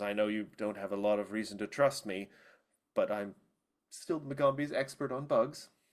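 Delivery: mumbling under the breath, half to herself. Narrating a story scene, voicing a bug expert character who is muttering. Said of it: "she kind of mutters".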